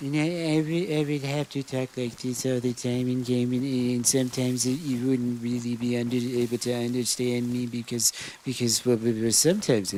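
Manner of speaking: put-on mumbling office worker voice. Showing how the character would sound if voiced all game: mumbling Milton voice. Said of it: "Milton kinda, like, mumbles and shit".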